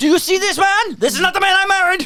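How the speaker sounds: put-on very high-pitched, Americanized German accent. Retelling a mother's line from a scene, put-on german accent. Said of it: "My German accent".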